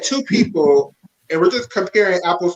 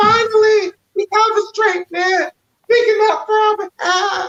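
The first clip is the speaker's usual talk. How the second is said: very high, squealing fangirl gush. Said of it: "and the girls is like".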